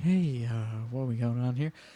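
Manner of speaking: quiet put-on radio voice. Explaining that NPR is not loud in your face: quiet NPR voice. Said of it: "N P R is just like".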